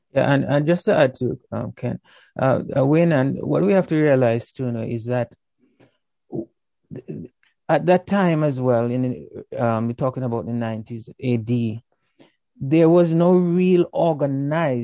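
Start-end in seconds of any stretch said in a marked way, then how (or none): 12.6-14.9 organized stressed, slow, high and loud. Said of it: "and I'm emphasizing the word organized".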